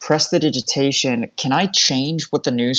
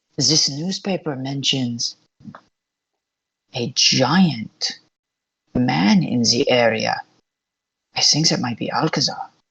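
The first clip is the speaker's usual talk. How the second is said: subtle, hushed stage whisper. Passing news to the party in character: subtle stage whisper. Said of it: "stage whisper, but I don't want it to be an obvious stage whisper".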